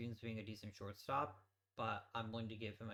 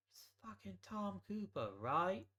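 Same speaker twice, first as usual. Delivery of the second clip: terrible put-on Australian accent, pitched high; 9 semitones higher than usual. Setting up depth charts, blurting a name in a terrible australian accent. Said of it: "my terrible Australian accent".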